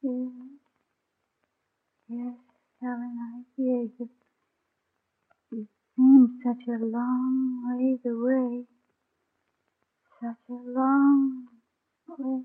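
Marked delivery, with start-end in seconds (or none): 2.1-12.4 slow, soft, drowsy, drugged-sounding voice drifting off. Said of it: "Feel drowsy already".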